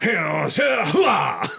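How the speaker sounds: gravelly, rough, creaky delivery. Describing the movie scene where Al Pacino gives directions, Al Pacino impression. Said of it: "Al Pacino's the one that's giving them the giving them the directions".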